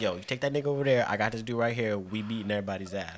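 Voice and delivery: hushed, secretive stage whisper. Acting out half-whispering a fight plan into a friend's ear: acting out a half-whisper. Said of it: "I'ma whisper in your ear like".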